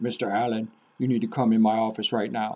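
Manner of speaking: low, deep, imposing voice. Explaining how pitch conveys feeling, imitating a p e teacher: low, deep voice. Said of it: "had this low, deep voice".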